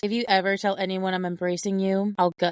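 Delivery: put-on plain-spoken, no-nonsense, very blunt delivery. Retelling how the audiobook narrator read the character's threat: imitating a blunt delivery. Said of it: "she goes very blunt".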